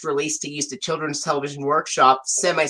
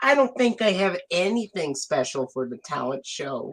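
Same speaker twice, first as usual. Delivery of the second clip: play-acted sorrowful, dejected, downcast tone; 2 semitones higher, 4 dB quieter than usual. Retelling a scene where Cassie shrinks, imitating Cassie's sad tone of voice. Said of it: "she has like a sad tone of voice".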